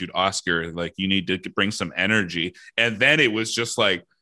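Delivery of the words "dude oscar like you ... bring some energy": ordinary talk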